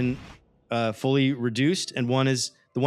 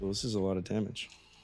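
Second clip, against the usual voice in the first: said under one's breath, lower and quieter; 6 semitones lower, 10 dB quieter than usual. Announcing a monster's damage roll to players, muttered under breath. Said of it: "Hate to hear that underneath his breath".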